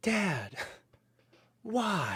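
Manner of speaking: high-pitched grown man's voice. Retelling a phone call from a grown son: imitating his grown son. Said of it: "he got a phone call from his grown son who's like".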